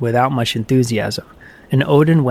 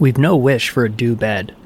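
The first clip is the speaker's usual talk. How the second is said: ordinary delivery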